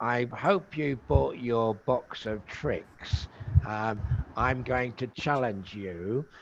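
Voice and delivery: eerie, very spooky horror-film voice. Retelling a woman greeting visitors inside a dark room, imitating a spooky voice. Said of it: "she talks to you in a very spooky voice".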